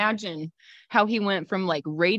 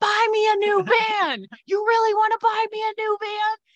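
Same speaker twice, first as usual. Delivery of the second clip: put-on very high, daring, drawn-out scream; 13 semitones higher, 4 dB louder than usual. Retelling yelling at a driver who nearly hit the van: imitating own screaming. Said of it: "So I start screaming at him".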